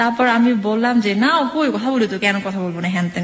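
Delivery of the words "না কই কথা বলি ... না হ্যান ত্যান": normal talking voice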